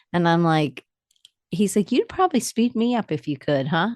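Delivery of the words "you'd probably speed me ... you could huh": easygoing, high, swooping Alabama Southern drawl. Retelling what the husband said about fast talk: imitating husband's Southern drawl. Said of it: "he has a good Southern drawl".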